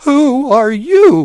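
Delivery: trembling, shaking, high, loud shout. Narrating a man calling out in fear to a dark shape, shaking voice. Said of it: "His shaking voice broke the silent valley".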